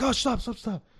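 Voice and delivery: very high-pitched squeak, voice pushed way up. Retelling how Norm reacted to a puppet on a radio show: Norm impression. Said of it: "Norm would be like".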